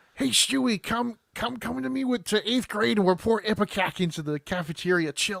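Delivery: bad, clumsy goofy cartoon voice, pitched high. Comparing a story to Family Guy, the speaker does a bad Chris Griffin impression. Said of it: "That is a terrible Peter Griffin".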